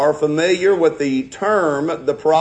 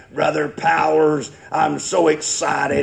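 put-on gruff old voice. Retelling an elderly visiting preacher's greeting at the door: imitating an old gruff voice. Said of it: "in that old gruff voice that he had".

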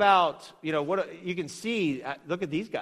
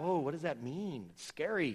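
sarcastic, obviously insincere fake alarm; 10 dB quieter than usual. Reacting to a claim that words were taken out: sarcastic mock alarm. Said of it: "I'm being sarcastic".

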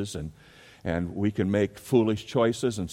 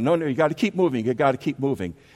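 fast, high-pitched yell; 6 semitones higher, 4 dB louder than usual. Retelling a uniformed man keeping traffic moving, imitating a traffic officer yelling. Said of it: "he's yelling".

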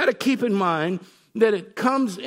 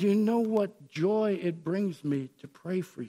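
soft, put-on earnest voice dripping with sincerity; 3 semitones lower, 7 dB quieter than usual. Retelling a scripture scene, the speaker voices Paul praying for the church, acting out Paul's sincerity. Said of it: "Dripping with sincerity".

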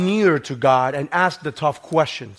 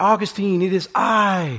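put-on woman's scream, calling out loudly; 4 semitones higher than usual. Retelling a story where a woman calls a man's name: imitating a woman screaming. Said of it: "she screamed".

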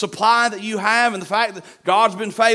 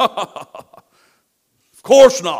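loud, swooping, scornful and jeering; 2 semitones lower, 6 dB louder than usual. Retelling the army answering the enemy: imitating a mocking reply. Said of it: "They're mocking".

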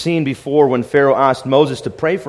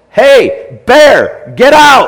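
shrill, very loud, high full-lung bellow, big swoops; 10 semitones higher, 9 dB louder than usual. Retelling how a man found a bear in his house, the speaker reenacts his yell. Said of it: "he yelled at the top of his lungs".

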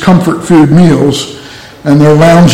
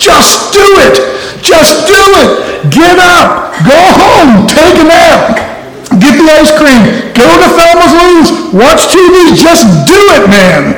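very high-pitched, fed-up, exasperated yelling; 12 semitones higher than usual. Telling a story, voicing a man from New York yelling at Barney: retelling an exasperated yell. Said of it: "the exasperated man from New York yells at him".

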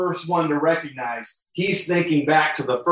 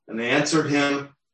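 ordinary delivery

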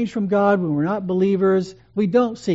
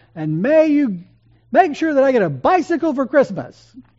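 put-on sudden raised carrying voice, pitched up; 7 semitones higher, 4 dB louder than usual. Speaker retelling a boy's bedtime prayer as the boy suddenly raises his voice. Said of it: "he raises his voice and says".

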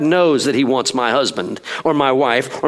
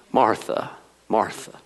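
gentle, soft, breathy, tender, compassionate voice; 3 semitones lower, 6 dB quieter than usual. Acting out a double saying of a name, acted compassion on martha. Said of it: "I see nothing but compassion".

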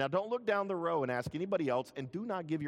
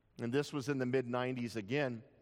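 ordinary delivery

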